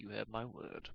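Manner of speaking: as low as possible, very hushed and quiet. Voicing a character answering a promise request: in the lowest tone possible. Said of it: "in the lowest tone he can".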